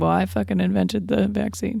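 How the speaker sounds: usual speaking voice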